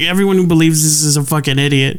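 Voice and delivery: put-on cheeky, sass-laden tone. Retelling how a teacher dismissed conspiracy believers: imitating a teacher's sassy tone. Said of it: "sassiness in his voice when he's like".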